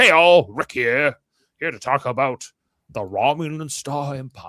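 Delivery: put-on slow English accent, video host voice. Imitating a YouTuber from England who introduces his videos: impression of Rick, English accent. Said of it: "That's my impression of him".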